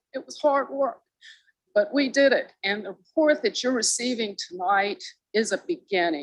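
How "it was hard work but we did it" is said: a little emotional, moved, higher delivery. Speaker presenting a volunteer group's report to City Council, a little emotional. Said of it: "I'm getting a little emotional".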